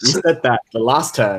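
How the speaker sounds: ordinary talk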